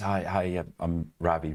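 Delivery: put-on, very nervous, halting, slow delivery. Retelling how the gopher turned up at the hedge fund door, imitating Ravi, nervous. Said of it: "Very, very nervous".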